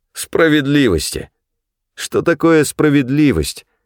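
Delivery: derisive, scoffing tone. An interrogator retorting to the woman being questioned, mocking. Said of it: "насмешливо спросил один из следователей".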